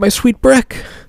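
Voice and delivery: very high, soft-toned voice.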